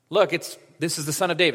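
normal talking voice

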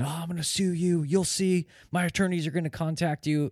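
put-on yell, pitched very high and shrill. Retelling what a man chasing the speaker to the car shouted: imitating someone yelling. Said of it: "he's yelling at me saying".

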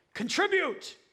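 loud, high-pitched, shrill one-word yell. Retelling what a dad yells as his son runs up the court: retelling a dad's loud shout. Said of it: "he says it really loud".

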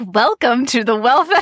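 cheery, bright, upbeat, chipper put-on voice. Showing how she switches into her chipper voice after talking it through. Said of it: "get my chipper voice".

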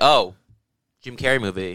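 normal talking voice

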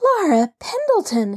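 astonished, high, surprised cry of recognition. She recognizes the girl's voice and calls her by name: exclaiming a name. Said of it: "she exclaimed".

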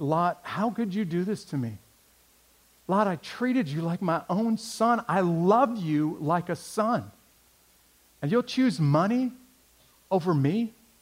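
put-on pained, hurt voice. Retelling Abraham's words to Lot, acting out Abraham's pained voice. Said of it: "Do you hear the pain in Abraham's voice".

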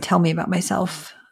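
ordinary talk, nothing marked

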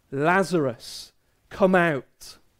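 loud, called-out delivery. Retelling Jesus calling out to Lazarus, in a loud voice. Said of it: "in a loud voice".

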